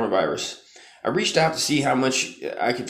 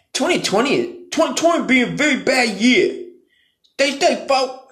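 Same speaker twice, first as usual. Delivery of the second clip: put-on voice, much higher, louder and slower; 12 semitones higher, 4 dB louder than usual.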